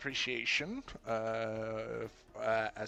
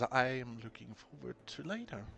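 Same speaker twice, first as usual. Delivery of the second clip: hushed, soft whisper. Narrator voices a man who hands something over, whispering. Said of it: "and he whispers".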